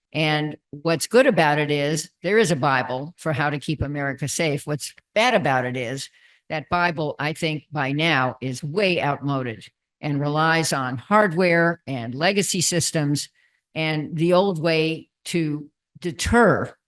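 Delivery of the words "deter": the word deter strongly stressed. Explaining what a commission found about the strategy: stress on deter. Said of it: "I'm stressing the word deter".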